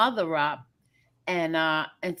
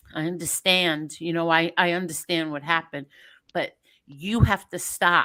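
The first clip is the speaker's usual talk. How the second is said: ordinary delivery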